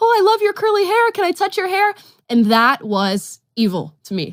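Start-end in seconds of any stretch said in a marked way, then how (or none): 0.0-1.9 put-on very high, quick, eager, curious little kid voice. Recalling school, a speaker mimics what kids would say to them; imitating a curious kid. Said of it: "Acting out the vo- vocal intonations of a curious kid".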